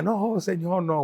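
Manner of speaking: light, mild shout, called out. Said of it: "estoy gritando".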